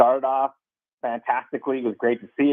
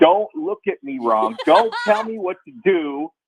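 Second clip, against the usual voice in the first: put-on aggressive angry voice, higher and louder; 6 semitones higher, 4 dB louder than usual. Imitating how Jess acts after drinking late at night: imitating aggressive angry Jess. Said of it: "aggressive, angry Jess".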